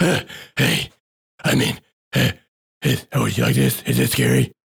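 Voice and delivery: creaky voice with the growl slipping away. Imitating Batman losing the gruff voice, then asking if it's scary. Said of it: "then loses it and it's like".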